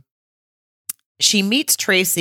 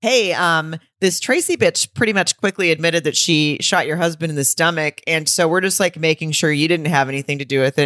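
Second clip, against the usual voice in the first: plain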